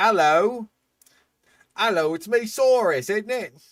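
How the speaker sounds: loud, high put-on Cockney accent, dinosaur voice. Joking about the Allosaurus name, doing a Cockney dinosaur voice. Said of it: "tell me we don't have a Cockney dinosaur".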